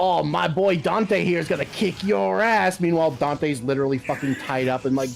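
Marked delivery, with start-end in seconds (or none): 0.0-2.8 grating high creaky nonstop chatter, annoying sidekick voice. Retelling what an annoying character kept saying: imitating an annoying character. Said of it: "he would keep doing shit like".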